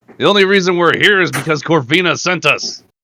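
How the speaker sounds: very loud, high-pitched shouting. Player voicing a character swinging at skeletons mid-fight, yelling.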